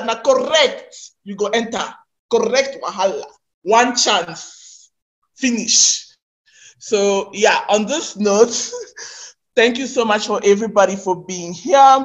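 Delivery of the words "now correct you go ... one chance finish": Nigerian pidgin English accent. Closing a session with the audience, switching into a Nigerian pidgin accent. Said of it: "let me use my Nigerian pidgin accent".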